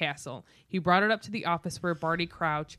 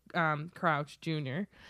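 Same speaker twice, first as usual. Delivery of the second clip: ordinary delivery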